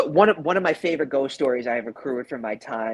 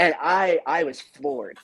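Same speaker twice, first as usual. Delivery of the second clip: plain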